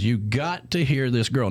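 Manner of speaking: ordinary talk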